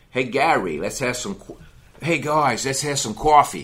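Long Island, New York way of talking. Show how your good friend from Long Island, New York talks, in a Long Island accent. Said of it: "they talk like that".

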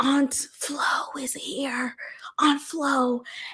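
slow, hushed, secretive whisper. Imitating people on YouTube who talk about their periods: imitating someone whispering. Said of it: "why are you whispering to me?".

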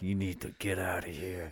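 very low, very quiet, hushed hero voice. Quoting a scene where he punches Gordon and runs away, in a Batman voice. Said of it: "they were both doing the Batman voice".

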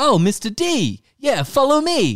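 overacted, hammy, eager, excited, very high voice. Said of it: "he overacts it".

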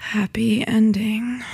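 sexy, sultry, seductive narrator voiceover. Speaker shows how they do voiceovers for their travel vlogs, in a sexy voice. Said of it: "how do I make myself sound as sexy as possible".

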